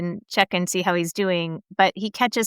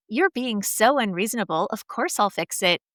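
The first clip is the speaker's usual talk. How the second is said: usual speaking voice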